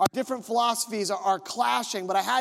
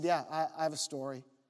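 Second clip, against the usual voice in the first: very calm, softer voice. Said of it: "um, very calmly".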